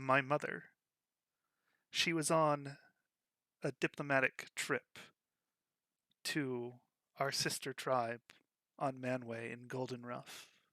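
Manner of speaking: trembling, tearful voice, shaking, halting, breaking mid-phrase. Game master voices a character whose mother is missing, speaking to the players: shaky voice, in tears. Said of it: "her voice shakes".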